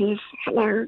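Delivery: put-on very high, babyish puppet voice. Describing the puppets in a show, doing the baby puppet: baby voice. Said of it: "the baby, and who talks like".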